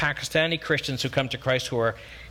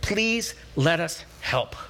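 mock pleading, acted-out begging, slower; 3 semitones higher than usual. Speaker acts out people begging him to let them help, acting out begging. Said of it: "The true definition is they begged him".

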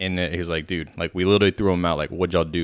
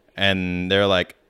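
normal talking voice

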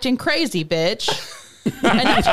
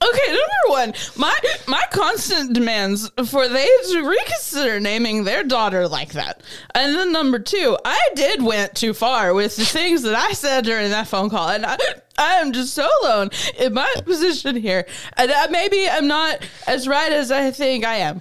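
slow, fake, tipsy drunk voice; 3 semitones higher than usual. Reading the mother's explanation line by line, as asked: acting drunk. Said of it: "read the following explanation in that same voice".

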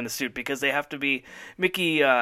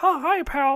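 high-pitched cartoon mouse voice; 12 semitones higher than usual. Talking about his son, the speaker does a Mickey Mouse voice. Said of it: "I can only say".

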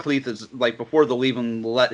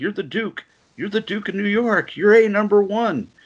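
very high, cackling laugh-talk, half-laughing, half-crying; 10 semitones higher than usual. Retelling how the president laughs at the duke he shot, imitating a cackling laugh. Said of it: "he's just kind of cackling".

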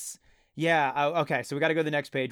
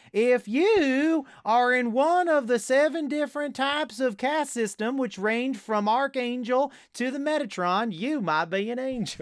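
high put-on Southern accent, "you" drawn out; 8 semitones higher than usual. Reading a joke day-calendar line aloud: Southern accent. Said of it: "in that very good Southern accent I did".

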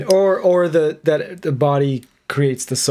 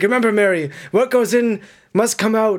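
put-on high shout; 7 semitones higher than usual. Retelling what a character yelled from a taxi: imitating someone yelling. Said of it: "yelling it from the back of the taxi".

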